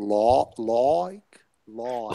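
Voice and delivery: put-on Australian accent, "like" said as "law". Imitating a newsreader saying the word like: imitating an australian saying like. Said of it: "he, he said like this".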